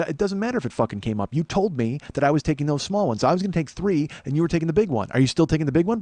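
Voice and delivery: heated, escalating anger. Retelling confronting a coworker who took an order: retelling own angry confrontation. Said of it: "when I get mad, I get big".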